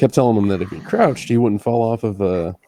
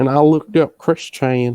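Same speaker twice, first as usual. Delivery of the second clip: bad fake Southern accent, higher pitch; 5 semitones higher than usual. Asked to retell his story in a really bad Southern accent, the speaker begins. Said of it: "could you say this all in a really bad Southern accent?".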